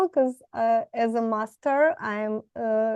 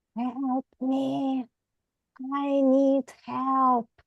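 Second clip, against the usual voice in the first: whispered, much slower; 3 semitones higher than usual. Describing a scene, the speaker performs the call of someone whispering. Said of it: "the whisper goes like".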